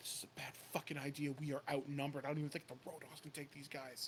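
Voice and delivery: soft, hushed half-whisper. Stepping out of a panel van in front of her father and the guards, half-whispering. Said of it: "she kind of whispers".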